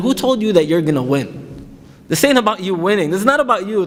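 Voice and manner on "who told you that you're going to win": usual speaking voice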